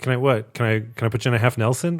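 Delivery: mock-innocent voice with an audible smile. Retelling how someone asked his boss something, with an innocent smile. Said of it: "innocent smile on his face".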